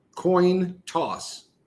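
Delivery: "coin toss" enunciated slowly, carefully, deliberately. Speaker demonstrating a phrase they always stumble on, slow careful enunciation. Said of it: "I have to say it really slow".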